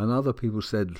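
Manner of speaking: plain reading voice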